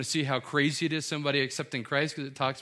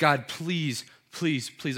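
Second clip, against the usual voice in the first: mock desperate, imploring, pleading delivery. Acting out the apostles' prayer to god: imitating a pleading prayer. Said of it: "a pleading".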